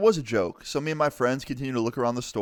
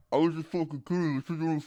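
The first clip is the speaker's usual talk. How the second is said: put-on angry man voice, higher and quieter; 4 semitones higher, 4 dB quieter than usual. Retelling how an angry man in a costume spoke: imitating an angry man. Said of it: "it didn't really sound like that. It was more like".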